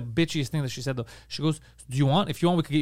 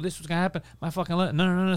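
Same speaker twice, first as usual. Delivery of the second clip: furious, fuming outburst, breaking off abruptly; 2 semitones higher than usual. Retelling own reaction when the luggage was lost: imitating own furious outburst. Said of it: "and I'm fucking furious".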